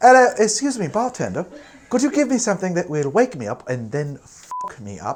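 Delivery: posh British accent with a high pitch. Retrying an impression of ordering from a bartender, as a posher Kate Moss impression. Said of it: "Is she more posh?".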